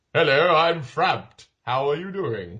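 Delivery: put-on fusty, stuffy old uncle voice. Describing a giant snake with the weirdest voice: Frabbed as fusty old uncle. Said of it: "a sort of fusty old uncle".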